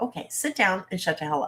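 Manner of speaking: stern, strict, scolding voice. Wanting to tell certain people to sit down, use your mommy voice. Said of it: "use my mommy voice and go".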